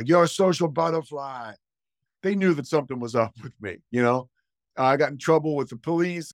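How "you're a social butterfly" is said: put-on Boston-accented speech. Recalling the coach calling, the speaker does Jim Reed's Boston accent. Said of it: "Boston accent".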